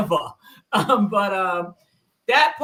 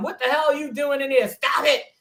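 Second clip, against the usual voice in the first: put-on old man yelling, pitched up; 7 semitones higher than usual. Retelling how the grandpa yelled from the other room: imitating the grandpa yelling. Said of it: "you heard the grandpa yelling".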